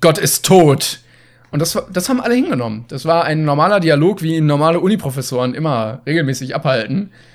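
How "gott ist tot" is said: mock, completely theatrical delivery, much slower. Speaker retells a professor answering a freshman in a full lecture, mock completely theatrical. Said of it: "Und sie so völlig theatralisch so".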